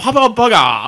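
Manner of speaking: heavy, exaggerated, caricatured Japanese accent. Retelling a man ordering a burger at the counter, in a stereotypical thick Japanese accent. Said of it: "the most stereotypical thick Japanese accent".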